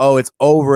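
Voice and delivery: loud, cocky, self-assured delivery. Retelling a wrestling match, imitating AJ Styles. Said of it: "and he's like".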